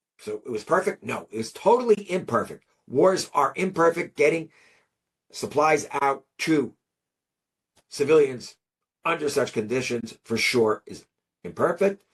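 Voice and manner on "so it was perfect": normal talking voice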